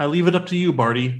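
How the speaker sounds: put-on super calm tone. Recapping a scene, quoting Dumbledore speaking to another character: imitating Dumbledore, super calm. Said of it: "But then super calmly".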